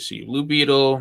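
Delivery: ordinary talk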